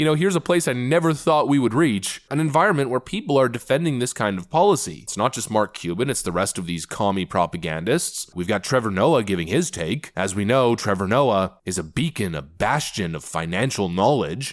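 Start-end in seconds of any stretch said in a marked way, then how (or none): 10.2-14.5 dry, mocking, tongue-in-cheek sarcastic tone. Commenting on a commentator giving his take: sarcastic. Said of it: "You can sense the sarcasm in my voice".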